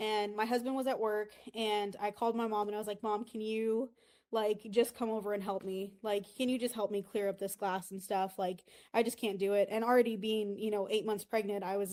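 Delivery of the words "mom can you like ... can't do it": put-on tearful pleading. A pregnant woman retells calling her mom for help with broken glass, retelling tearful pleading. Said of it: "I'm literally like crying".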